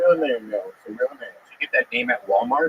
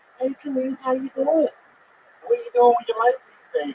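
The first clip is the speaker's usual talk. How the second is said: play-acted, all-excited, friendly tone; 10 semitones higher than usual. Retelling how a girl at McDonald's greeted them: imitating an excited greeting. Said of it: "She all excited to see me".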